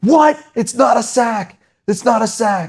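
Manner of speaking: furious, outraged, very high-pitched outburst. Retelling the coach's reaction to the ref's sack call, imitating a furious coach. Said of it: "that same coach loses his mind".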